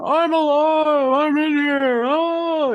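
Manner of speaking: goofy put-on funny voice, very high and slow. Imitating a book character who insists he is still alive: funny voice. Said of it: "he's got a very funny voice".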